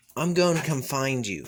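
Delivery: ordinary talk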